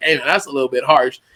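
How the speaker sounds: ordinary talk, nothing marked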